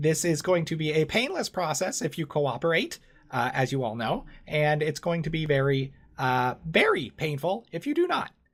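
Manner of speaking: high, officious, hunched humanoid rat-creature voice. A young Mushin rat creature on official business addresses the group, in a humanoid rat creature voice. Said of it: "A Mushin is about a 4 foot tall humanoid rat creature. They very much look like rats. They're hunched over and they're not pleasing on the eyes. But this Mushin looks a bit younger than the other ones".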